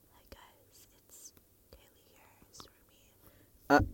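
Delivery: soft, mock-timid whisper. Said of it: "if I'm busy going".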